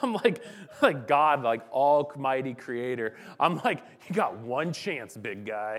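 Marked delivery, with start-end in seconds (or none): 4.1-5.8 mocking, derisive tone. Retelling lying in bed at night talking to God: retelling a mocking tone. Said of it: "And I mockingly".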